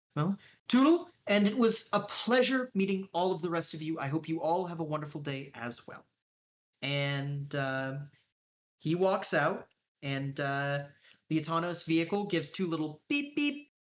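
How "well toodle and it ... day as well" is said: normal talking voice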